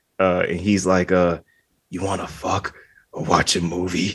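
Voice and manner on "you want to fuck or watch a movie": put-on menacing, threatening voice. Quoting a movie character's line to the girl he loves, mock-menacing. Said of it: "he just says it like so menacingly".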